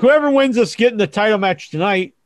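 ordinary talk

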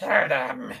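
very loud, raspy, little voice. Narrating a crystal calling out from a paper bag, little raspy crystal voice. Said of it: "in his little raspy crystal voice".

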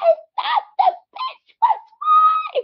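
put-on very high, slow, out-of-control scream. Retelling a clip where she was losing it: imitating a woman screaming. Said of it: "when she was screaming".

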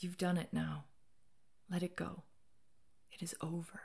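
gentle, quiet, breathy whisper. A woman holding the narrator, speaking to them, said quietly. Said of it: "She said quietly".

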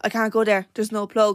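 plain

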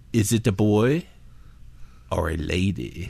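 put-on Mexican accent. Speaker retelling what a man asked while petting Lana, imitating a Mexican accent. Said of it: "this is what he sounded like".

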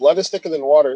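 ordinary delivery

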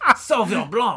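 fake, put-on French accent. A comedian tries naming a wine the way a wine critic might: put-on French accent. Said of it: "Can you criticize wine with a French accent?".

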